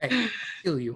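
mock Chicago tough-guy accent. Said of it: "That's not how they talk in Chicago".

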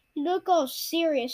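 plain reading voice

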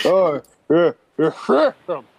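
high, loud toothless sailor voice.

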